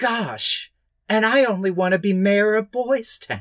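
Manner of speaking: put-on high old-movie kid voice. Mocking a scene from a bad movie: imitating Tommy from Boys Town. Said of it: "the way that kid goes".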